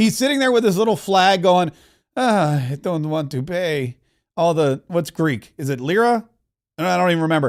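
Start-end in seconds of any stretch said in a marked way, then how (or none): 2.2-4.8 mock very slow, crushed, downcast, dejected moping. Voicing the man from Greece sitting with his little flag: imitating a dejected man. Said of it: "he's so dejected".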